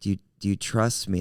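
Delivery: ordinary delivery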